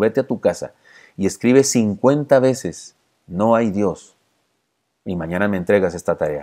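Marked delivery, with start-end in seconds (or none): none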